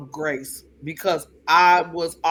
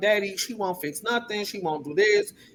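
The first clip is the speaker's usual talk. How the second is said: weepy, tearful, crying voice; 4 semitones higher, 5 dB quieter than usual. Retelling a call to dad about the landlord mom: retelling own crying plea. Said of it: "and I was crying".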